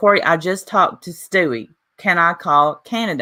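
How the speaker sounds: ordinary delivery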